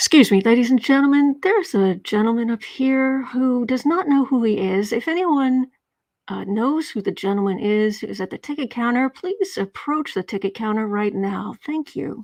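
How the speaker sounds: put-on, weary, fed-up yet polite announcer voice. Telling a joke, voicing a fed-up airline worker on the speaker: imitating a fed-up airline announcement. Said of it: "fed up, the airline worker grabs the overhead speaker".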